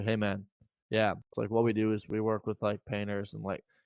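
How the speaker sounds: very low, deep, quiet, dropped-down voice. Showing how he talks with a certain guy, lowered tone of voice. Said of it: "I would lower my, my tone of voice".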